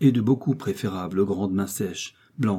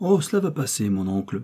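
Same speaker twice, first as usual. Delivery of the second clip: plain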